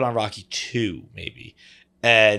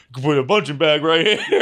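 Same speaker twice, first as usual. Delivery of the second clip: put-on commercial announcer voice, higher pitch; 6 semitones higher, 3 dB louder than usual. Describing a commercial, quoting what the man says in his voice. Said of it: "He's got the voice".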